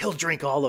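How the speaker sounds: put-on whisper. Retelling what the speaker's girlfriend whispered during a film, retelling a whisper. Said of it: "she just leans in and whispers".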